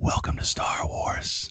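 slow, quiet whispered aside. Retelling what someone walked right up and whispered to him, retelling a whisper. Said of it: "walks right up to me and whispers".

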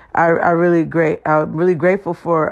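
stuttering, stumbling, words stammered and restarted.

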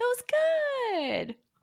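mock-condescending tone. Mocking people who praise a joke attempt, mock-condescending praise. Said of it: "very condescendingly like".

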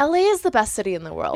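ordinary talk

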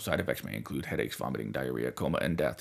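very deep, hushed, soft ad-disclaimer voice. Describing how they sounded before, imitating an antidepressant commercial disclaimer voice. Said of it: "like an extended version of the guy at the end of like antidepressant commercials".

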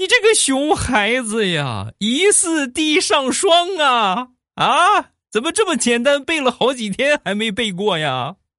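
very high, drawn-out, grief-stricken, furious indignant outcry. Retelling the neighbor scolding her child over memorizing a poem: imitating a grief-stricken furious shout. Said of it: "女主人悲愤的大喊".

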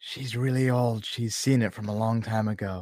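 secretive, hushed half-whisper. Playing Nork, speaking quietly to Rayanne: half-whispering in character. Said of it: "Nork's gonna whisper over to Rayanne".

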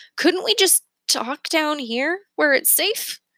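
anxious pleading tone. At the foot of a rope ladder up a tree, a character asks; nervous. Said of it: "Remy asked nervously".

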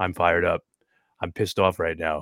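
flat, emotionless monotone, kept dead level. Imitating a contestant who says he is angry: imitating Jonathan with no emotion. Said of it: "He never shows any emotion".

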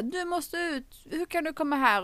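put-on high, loud yelling. Retelling a film scene where the dad yells someone out: imitating a yell. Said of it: "Och så skriker pappa bara".

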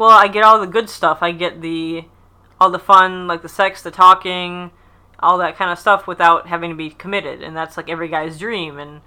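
ordinary talk

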